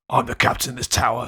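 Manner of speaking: rough, gruff, low Cockney voice. Imagining the last paragraph spoken aloud: gruff cockney accent. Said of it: "I've been imagining that last paragraph in like a really like gruff Cockney accent".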